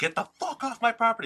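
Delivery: put-on, very high, all-out screaming. Retelling telling police officers to leave: retelling own screaming. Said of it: "I screamed until my voice died".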